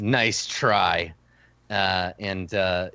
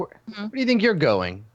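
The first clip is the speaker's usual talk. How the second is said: very high, suspicious, challenging tone; 9 semitones higher than usual. Voicing a captain who spotted someone sneaking off: captain challenging. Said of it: "he's like".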